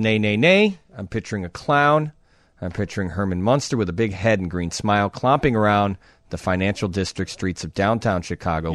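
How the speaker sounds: normal talking voice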